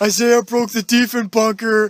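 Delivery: high, loud, slow, drawn-out carrying yell. Retelling how someone yelled during a silent tour: imitating Cam yelling. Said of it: "Cam would just yell".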